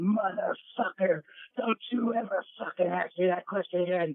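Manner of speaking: put-on high, enraged screaming rant, swearing hard. Speaker recounts finding Luna standing over a drunk guy, imitating Luna screaming.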